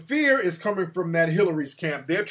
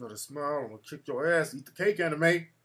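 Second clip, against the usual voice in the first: put-on muttering under breath, quieter; 3 semitones lower, 5 dB quieter than usual. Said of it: "they're whispering under their breath".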